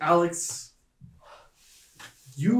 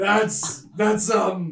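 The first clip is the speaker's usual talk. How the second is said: high, loud, proud cheering. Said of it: "he just goes".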